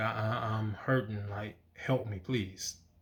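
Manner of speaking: pleading voice. Retelling a past prayer to God: retelling own pleading. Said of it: "I was pleading".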